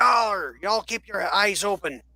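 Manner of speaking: high-pitched, shouted voice. Voicing a ship's captain calling out to everybody: captain shouting to the crew. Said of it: "the captain shouts out to everybody".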